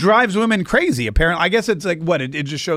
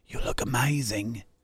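hushed, very quiet whisper, barely there; 5 semitones lower, 10 dB quieter than usual. Retelling the moment Meghan walks down the aisle, imitating Prince Harry whispering. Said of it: "he whispers".

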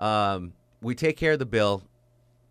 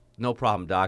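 ordinary talk, nothing marked

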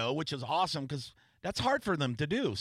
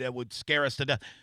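ordinary talk

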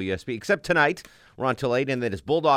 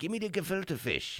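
sudden put-on Irish accent, pitched high; 7 semitones higher, 11 dB quieter than usual. Acting out a quoted line from someone: put-on irish accent. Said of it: "he has an Irish accent all of a sudden".

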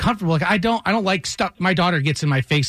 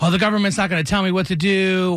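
normal talking voice

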